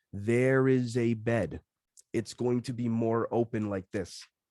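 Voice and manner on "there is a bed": very slow, unhurried, every word drawn out. Speaker demonstrating saying a phrase slowly instead of quickly, nice and slowly. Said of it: "But if I said nice and slowly".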